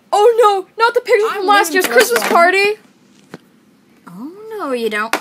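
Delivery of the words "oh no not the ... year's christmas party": very loud, shrill, high-pitched character voice. Voicing a friend in an impressions video: imitating Lucky. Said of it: "I'm voicing Lucky".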